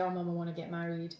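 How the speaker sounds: imitated sobbing while speaking. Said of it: "I start crying my eyes out".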